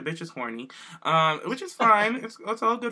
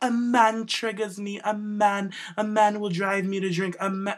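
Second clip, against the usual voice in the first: slow, drawn-out, dramatic fake British accent; 4 semitones higher than usual. Retelling what Rosa said about men, imitating Rosa in a British accent. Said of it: "she's not British".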